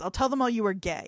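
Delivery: plain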